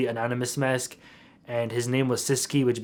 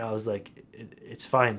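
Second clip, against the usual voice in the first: ordinary delivery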